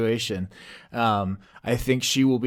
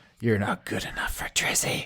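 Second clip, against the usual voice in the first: loud, carrying stage whisper; 3 semitones lower, 6 dB quieter than usual. A hologram character comes out and looks at another character, whispering. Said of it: "he whispers".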